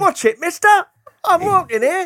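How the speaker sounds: fake Cockney street-kid voice, very high pitch. Showing a co-host how the line should be said, in a put-on East End street accent. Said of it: "are you auditioning for Oliver now?".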